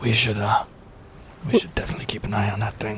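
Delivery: hushed whisper. Talking with a companion about someone who can hear thoughts, whispering. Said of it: "I don't know why I'm whispering".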